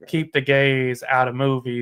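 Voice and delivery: ordinary talk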